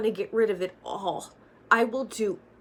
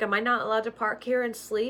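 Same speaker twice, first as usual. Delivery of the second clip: ordinary talk, nothing marked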